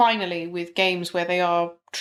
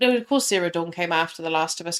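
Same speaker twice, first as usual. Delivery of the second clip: plain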